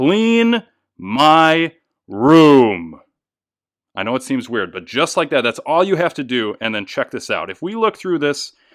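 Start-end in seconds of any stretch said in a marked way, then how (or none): 0.0-3.0 very loud, forceful, strong, drawn-out "my". Showing viewers how to use magic in a card trick, strong voice. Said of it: "in a strong voice".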